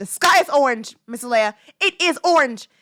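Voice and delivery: mock stubborn, insistent, utterly convinced child voice. Retelling what kids say to a teacher: imitating kids insisting with conviction. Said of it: "they'll say it with so much conviction".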